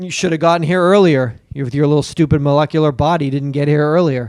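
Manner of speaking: imitated, mock-snarky tone. Retelling what he said to you for arriving late, retelling a snarky remark. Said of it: "He got real snarky".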